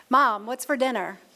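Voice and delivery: ordinary delivery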